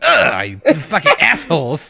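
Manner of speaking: acted, swooping, grossed-out disgusted outburst. Retelling tasting sweet relish by mistake: retelling own disgusted reaction. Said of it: "took a bite and was like".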